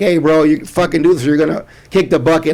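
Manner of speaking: mock blunt, straight-talking tone. Retelling how the doctors over there talk to patients: imitating a blunt doctor. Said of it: "like, straight up".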